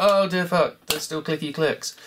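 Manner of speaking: plain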